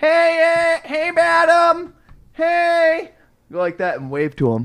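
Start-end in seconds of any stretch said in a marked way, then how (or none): 0.0-3.1 mock very high, very slow call, "hey" drawn out. Retelling how a coworker calls to someone far away: imitating a coworker calling out. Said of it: "he'd be like".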